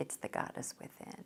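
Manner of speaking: soft, low, close whisper.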